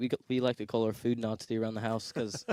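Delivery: normal talking voice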